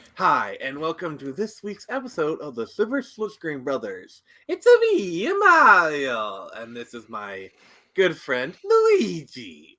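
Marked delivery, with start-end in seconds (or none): 4.5-9.6 loud, slow, creepy cartoon voice with swooping pitch. Opening an episode of Silver Screen Brothers with a co-host, do a creepy Mario impression. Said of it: "That was a very creepy impression of Mario".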